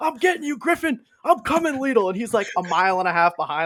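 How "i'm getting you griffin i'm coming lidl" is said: very high, taunting yelling from far back. Act out the senior far behind in the sprint, calling to Griffin, imitating someone yelling at a runner. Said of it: "he's just yelling at Griffin".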